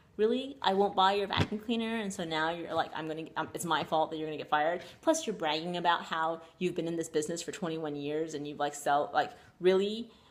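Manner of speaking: normal talking voice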